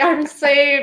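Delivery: put-on high, overjoyed little voice, so happy. Imitating a trapped mom as so happy: imitating someone sounding happy. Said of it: "so happy".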